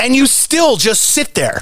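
furious fed-up rant. Ranting at a driver ahead who just sits there, angry ranting. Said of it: "He's so angry".

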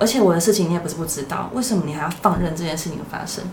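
ordinary talk

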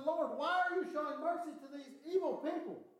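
put-on distressed, upset, bewildered, all worked-up tone. Retelling the Bible story, imitating an upset Jonah. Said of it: "Jonah gets all upset".

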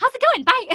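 very high, very loud, shrill, breezy and dismissive. Recounting how a woman rushed through the party guests, imitating her fast talking. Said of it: "everything she says is so fast".

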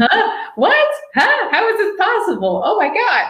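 play-acted very high, thrilled, disbelieving, swooping shrieks. Recalling getting off the phone after a surprise invitation to space, retelling own screaming. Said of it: "screaming like".

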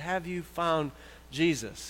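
hushed, soft, quiet, under-the-breath voice. Telling a joke, quoting a man who held another underwater, quietly. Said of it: "kind of quietly says".

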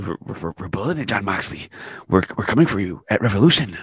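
unhinged, completely psychotic evil-scientist madman voice. Retelling a wrestler's promo from a wood shack: Kenny Omega impression. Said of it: "That's my Kenny Omega impression".

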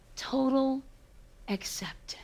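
hushed, soft whisper of awe and total acceptance.

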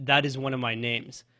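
ordinary talk

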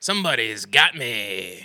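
wild, zany, cartoonish comic character voice. Retelling someone's impression of The Mask, The Mask impression. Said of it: "I do an impression of The Mask".

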